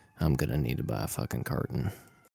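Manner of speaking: low, quiet, mumbled mutter. Narrating a man heading off to virginia, he voices him: muttering to himself. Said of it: "as he mutters to himself".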